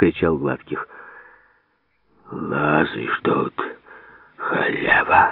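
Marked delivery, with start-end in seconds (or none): 2.3-5.3 angry, cross, hissed voice. An Old Believer, apparently at his daughter: hissing. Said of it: "шипел старовер".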